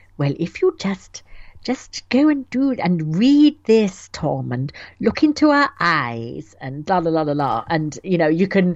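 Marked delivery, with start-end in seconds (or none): 0.2-7.7 play-acted slow, syrupy, honeyed sweet voice. Mimicking a woman's special voice she uses on Tom: sweet syrupy voice. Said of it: "she's doing her special syrupy voice".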